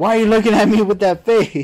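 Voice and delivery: shrill, loud, screamed outburst. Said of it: "and then he was screaming".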